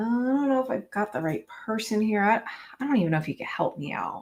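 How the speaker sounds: unsure, faltering, confused, hesitant delivery. Showing the best tone to use when cold calling: confused cold-call tone. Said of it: "definitely confused".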